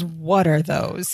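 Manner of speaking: acted-out irritated, fed-up, pissed-off tone. Retelling a sitcom scene, imitating a pissed-off Larry. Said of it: "He's, he's pissed".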